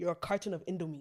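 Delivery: normal talking voice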